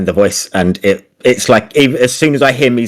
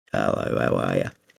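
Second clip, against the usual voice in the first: put-on raspy croaky frog voice, much lower, quieter; 14 semitones lower, 13 dB quieter than usual. Answering chat requests to do the frog's voice, raspy, croaky frog voice. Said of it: "little raspy sort of croakiness to his voice".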